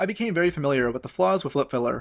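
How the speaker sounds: ordinary delivery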